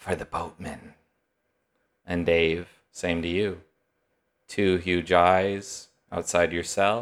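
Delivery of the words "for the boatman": soft, hushed, quiet whispered voice. Narrator voicing an unseen figure at a prisoner's cell: whispered. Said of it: "a whispered voice".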